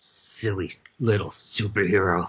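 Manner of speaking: low, growled voice. Voicing an unseen figure growling at a player's superhero: growling voice. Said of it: "you hear a growl to your right that goes".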